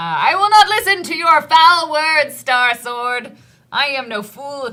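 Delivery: loud, high-pitched shout. Voicing a sword master who yells at a whispering sword: yelling. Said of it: "he yells at it".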